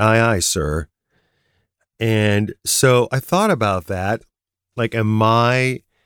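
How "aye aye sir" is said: usual speaking voice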